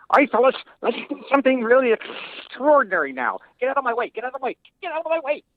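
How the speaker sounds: tiny man voice, very high and small. Asked to perform a voice he did for the show, Meltman voice. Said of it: "He was very small".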